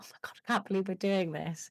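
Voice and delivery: put-on little giggle while talking. Retelling two women having a wee together, imitating giggling while talking. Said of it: "having a little giggle".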